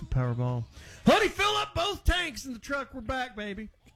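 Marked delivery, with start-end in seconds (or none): 1.1-3.7 giddy, very high, swooping excited whoop. Acting out a driver thrilled by cheaper gas: imitating an excited american. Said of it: "Americans are reacting like they hit".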